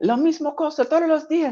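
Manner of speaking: put-on shrill, very high, fed-up yell in Spanish. Retelling a man arguing outside in Spanish: imitating a man yelling in Spanish. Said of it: "yelling at this guy who's always outside".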